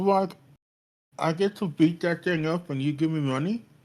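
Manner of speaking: high voice, words mashed round a full mouth. Retelling a scene about Tokumi, imitating Tokumi talking with full mouth. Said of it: "has like a mouthful of like like meat skewer still".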